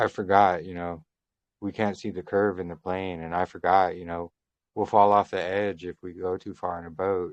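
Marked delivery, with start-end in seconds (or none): none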